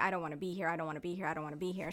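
put-on crying. Recalling meeting her mother at baggage claim, she quotes herself, retelling her own crying. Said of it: "I'm crying and I'm like".

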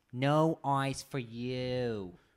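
fake Jersey-sounding accent. Retelling how a worker refused to give ice: imitating worker with Jersey-like accent. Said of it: "What is that, Jersey?".

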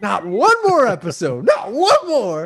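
put-on angry ranting. Acting out the co-host going off after recording stops: imitating someone going off angrily. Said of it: "he just l-, goes off".

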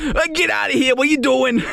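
put-on Boston island accent, pitched way up. Describing drivers who get out and argue, speaker does a put-on island accent. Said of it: "Let's just say they're on the island".

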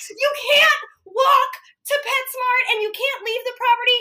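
high, loud yelling.

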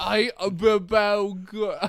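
put-on Cockney accent. Asked to do a voice, repeating a phrase in a Cockney accent. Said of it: "I just do Cockney".

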